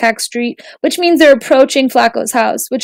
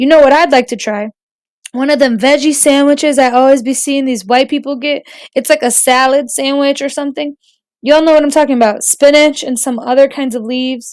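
ordinary delivery, nothing marked

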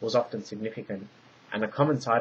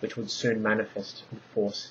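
plain

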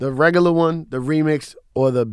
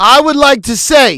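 shrill, very loud, high-pitched yelling; 11 semitones higher, 11 dB louder than usual. A speaker insisting on making a statement, yelling. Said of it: "Why are you yelling?".

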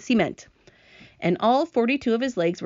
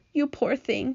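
gentle, sympathetic murmur under the breath; 4 semitones higher, 4 dB quieter than usual. Wiping away a tear, she speaks to the centipede, murmured. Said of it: "she murmured".

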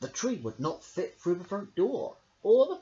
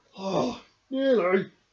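sighing, higher and louder; 4 semitones higher, 5 dB louder than usual. Narrator reading the bear's reply after a tangled wrapping attempt; sighed. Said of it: "sighed Big Bear".

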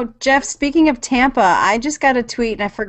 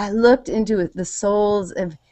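ordinary talk

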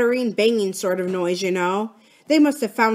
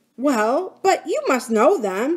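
amazed, baffled, disbelieving, pitched-up voice; 5 semitones higher than usual. Philip answers Bill's sharp question about two men, astonished. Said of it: "said Philip in astonishment".

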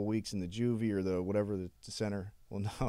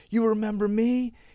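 mock screaming, higher and louder; 13 semitones higher, 9 dB louder than usual. Retelling a mother confronting the judge at the courthouse: imitating a mother screaming. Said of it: "Screaming, bro".

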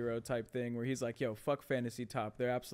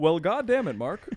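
mock dad voice with a fake accent; 6 semitones higher, 11 dB louder than usual.

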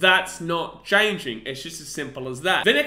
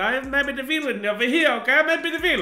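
sudden put-on Italian accent, pitched up; 8 semitones higher than usual. Video host addressing Bulldogs fans, slipping into an Italian accent. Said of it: "I don't know why I turned Italian there".

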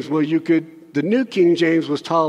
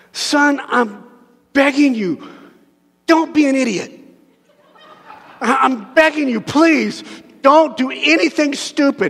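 put-on desperate pleading, pitched up and slow; 8 semitones higher than usual. Imitating a parent pleading with a son: imitating a desperate parent begging. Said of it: "so desperate you're like, you're just begging".

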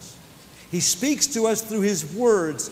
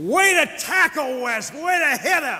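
shrill, very high-pitched bellowed shout; 10 semitones higher, 4 dB louder than usual. Retelling what someone bellowed out after a tackle, retelling a bellowed shout. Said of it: "Kenny's voice bellowed out".

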